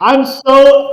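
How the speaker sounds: thrilled, high, loud, excited gushing.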